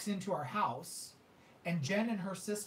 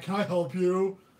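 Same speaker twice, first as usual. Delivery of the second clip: put-on manly, puffed-up macho voice, loud; 9 dB louder than usual. Retelling coming out of the shower to face someone, in a put-on lowered masculine voice. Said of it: "I lower the voice, get real masculine".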